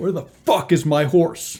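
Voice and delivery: outright hollered, high, loud yell. Voicing a man heard from inside the small vineyard: Evan Spanbauer yelling. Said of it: "He yells".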